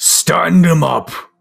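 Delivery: giant voice, booming, very loud, high, rough. Narrator voicing a figure cheered on by the people around, giant booming voice. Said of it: "his giant booming voice, like louder than you would have expected".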